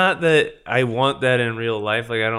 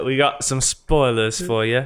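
put-on British-accented voice. Joking with a co-speaker about how to say spoilers, British accent. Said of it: "I was thinking more of just like a British accent".

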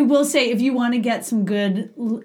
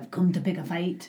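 put-on Irish-sounding accent, lower and quieter; 5 semitones lower, 7 dB quieter than usual. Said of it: "I was gonna say Mel Gibson in Braveheart".

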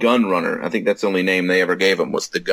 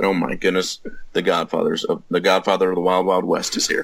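ordinary delivery

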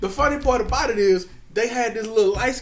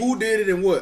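normal talking voice

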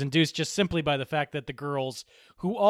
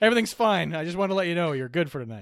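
usual speaking voice

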